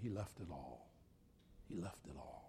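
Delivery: hushed whisper, barely voiced, very quiet. Retelling what another member said before a meeting, very quietly. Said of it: "another member said very quietly".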